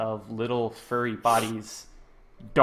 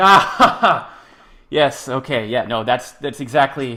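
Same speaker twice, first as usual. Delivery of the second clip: mock laughing through words, much louder; 3 semitones higher, 10 dB louder than usual. Retelling a man's reply after being told he made no sense: imitating someone laughing while talking. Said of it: "He immediately starts laughing".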